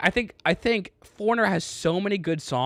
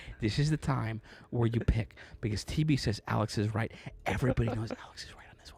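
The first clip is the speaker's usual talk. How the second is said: very quiet, hushed whispered aside; 8 semitones lower, 9 dB quieter than usual. Urging viewers to pick in a close poll: whispering like Andy. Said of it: "I'm gonna whisper just like Andy used to".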